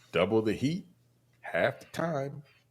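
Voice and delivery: mock hushed, very quiet voice. Complaining about someone's cooking, the speaker quotes her: retelling what she said. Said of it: "She says".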